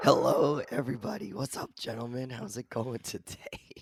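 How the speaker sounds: hoarse, raspy voice. Greeting the others at the start of the show, voice nearly gone. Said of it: "bringing y'all Pack-A-Day voice box [name]".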